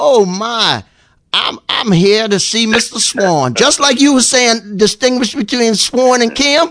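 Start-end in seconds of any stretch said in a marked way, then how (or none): 0.0-3.5 put-on southern accent, very slow drawl. Retelling what a man said on arriving at the airport, in a southern accent. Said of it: "in his southern voice".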